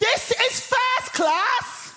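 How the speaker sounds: mock shrill, drawn-out, very high top-of-the-voice shout. Retelling a woman in a first class carriage shouting at them, imitating a woman shouting. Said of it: "at the top of her voice, she shouts".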